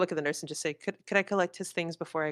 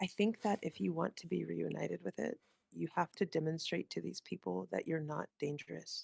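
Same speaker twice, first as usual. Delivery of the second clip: hushed whispering, much quieter; 9 dB quieter than usual. Leaning in toward Elijah to tell him something, whispering. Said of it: "I'm gonna like lean in and try to whisper".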